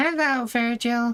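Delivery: very high, loud, squeaky voice. Voicing the game companion while playing through the quest: Paimon voice. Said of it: "the Paimon voice".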